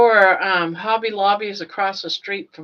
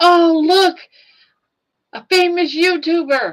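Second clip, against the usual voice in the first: put-on grand theatrical announcing, very high, loud, drawn out; 10 semitones higher, 5 dB louder than usual. Retelling a daughter pretending to spot a famous YouTuber: imitating someone making a big scene. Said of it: "making, like, this big scene".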